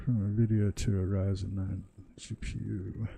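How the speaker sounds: muttered, mumbled reading aloud. Reading a message aloud: mumbling while reading. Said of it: "I'm mumbling as I read that".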